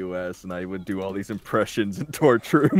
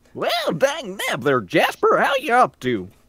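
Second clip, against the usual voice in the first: put-on very high, swooping old prospector voice; 12 semitones higher than usual. The speaker suddenly breaks into an old prospector voice. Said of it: "like an old prospector voice".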